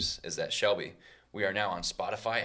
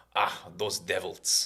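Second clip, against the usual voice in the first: put-on grumbling old-world delivery in a Slavic accent. Retelling what grandma says when bikers roar by: Slavic accent. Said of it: "some people aren't really good with the Slavic accent".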